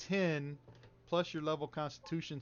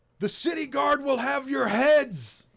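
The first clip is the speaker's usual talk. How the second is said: very loud, very high, shrill, drawn-out yelling; 11 semitones higher, 13 dB louder than usual. Voicing a fighter yelling from off to the side: NPC yelling a threat.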